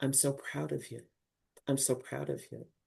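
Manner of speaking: hushed, very quiet half-whisper. Retelling what people said taken aside: imitating a half-whisper. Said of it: "just whispered to me".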